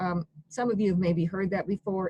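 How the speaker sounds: normal talking voice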